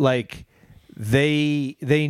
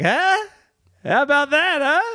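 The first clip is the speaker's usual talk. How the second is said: very high, hyped-up, crowd-pumping emcee voice; 13 semitones higher than usual. Retelling a comedy show, imitating the host hyping the crowd. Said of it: "the host goes up and he's like".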